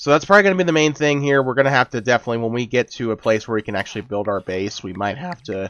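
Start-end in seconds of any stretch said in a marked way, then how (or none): 4.8-5.7 voice breaking and cracking mid-phrase. Explaining plans to build an underground shelter in a game: voice cracking. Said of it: "my voice just cracked".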